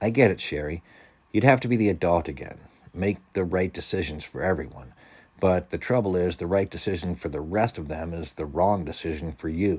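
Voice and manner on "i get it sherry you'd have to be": ordinary delivery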